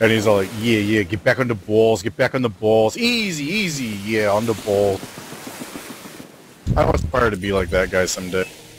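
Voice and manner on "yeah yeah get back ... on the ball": put-on heavy, thick, laid-on New Jersey accent. Recalling a man in a video from the 90s, in a thick New Jersey accent. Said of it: "got this really thick New Jersey accent".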